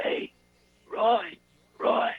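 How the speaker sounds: faint, nearly gone voice, pushed out. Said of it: "he could barely talk".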